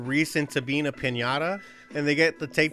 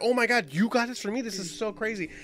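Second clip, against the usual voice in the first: put-on excited character voice; 6 semitones higher than usual. Retelling a TV episode where Reese buys Dewey a toy, imitating Dewey super excited. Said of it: "Dewey's like super excited".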